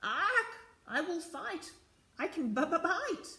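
high-pitched, screechy storybook parrot voice. Narrator reading a story aloud, the green parrot answering the others: screeching parrot voice. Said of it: "Screeched the green parrot".

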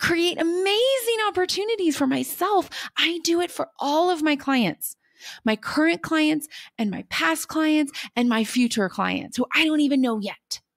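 high-pitched voice brimming with excitement. Speaking on the podcast about creating opportunities for clients, excited. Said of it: "Can you hear the excitement in my voice?".

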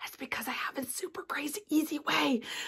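soft, hushed whisper. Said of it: "Sorry, I'm whispering".

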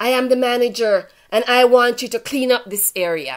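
loud, forceful shouting. Retelling what the manager shouted at them: imitating someone shouting. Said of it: "He started shouting".

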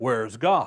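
put-on even sterner, severe voice, low and quiet. Telling a story, speaker acts out the preacher repeating his question to the boy, mock-stern. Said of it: "repeated the question in an even sterner tone".

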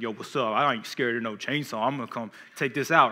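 acted arrogant, cocky tough-guy voice. Picturing a horror movie scene, acting an arrogant big bad boyfriend. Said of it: "the big bad boyfriend like".

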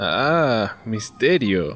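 mock-dramatic ironic exclamation. Asked who bolted the door, a companion exclaims ironically. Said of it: "exclamó Hal irónicamente".

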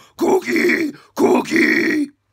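put-on gravelly puppet monster voice. Running through puppet character voices: Cookie Monster voice. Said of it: "Cookie Monster!".

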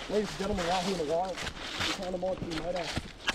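low, mock Australian wildlife host voice.

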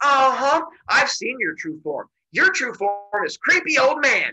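woman yelling angrily, high and drawn out. Retelling a woman getting in a man's face, imitating a woman yelling angrily. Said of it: "stop yelling".

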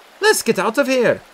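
resolute, very high. Speaking to her companions, decisive. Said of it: "Scatty said decisively".

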